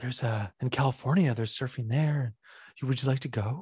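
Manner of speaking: put-on soft whisper. Retelling a film scene where a character offers a surfing trip: imitating a soft whisper. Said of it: "She kinda whispers".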